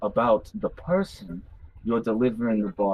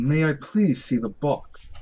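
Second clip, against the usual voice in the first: put-on British accent, character voice; 5 semitones higher than usual. Voicing a character the other players remark sounds British, British accent. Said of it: "She's British for some reason".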